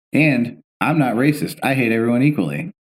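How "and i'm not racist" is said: usual speaking voice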